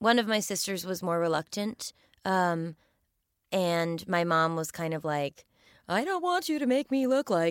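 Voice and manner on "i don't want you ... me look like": higher, swooping, teasing voice poking fun. Retelling mom's reluctance about being filmed: imitating mom's voice, teasing. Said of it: "I'm doing her voice now".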